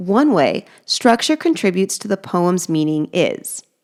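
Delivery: plain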